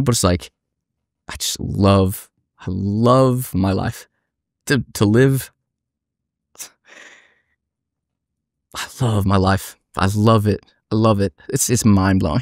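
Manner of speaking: slow, moved, emotional, love drawn out. Speaking after swearing not to get emotional, getting emotional. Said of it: "I swore I wasn't gonna get emotional".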